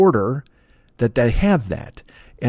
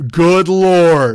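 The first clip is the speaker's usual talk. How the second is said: very loud yell, as loud as possible; 4 semitones higher, 6 dB louder than usual. Retelling what they blurted into a drive-thru microphone, retelling a yell at top of lungs. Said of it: "like I just said it at the top of my lungs".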